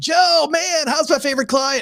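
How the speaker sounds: very high, gushing, over-the-top upbeat surfer-dude voice. Retelling a weekly phone call from Jessie: Jessie surfer-talk impression. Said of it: "Jessie talks like a surfer".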